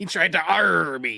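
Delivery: loud, laid-on, put-on pirate voice. Repeating a line from a show to the others, in a pirate voice. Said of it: "That just makes him sound like a pirate".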